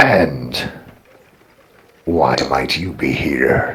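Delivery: put-on very low, stately, posh, regal orc accent. Narrating, the speaker voices a figure who approaches and looks at you: regal orc accent. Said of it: "More like a regal orc accent".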